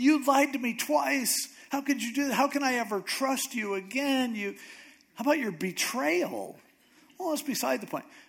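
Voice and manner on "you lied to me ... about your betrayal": high-pitched crying voice. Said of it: "crying even more".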